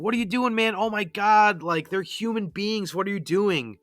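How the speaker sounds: acted, high, panicked, freaked-out voice. Retelling a game scene where a nursing student sees killings: freaking out. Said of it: "Brian is freaking out".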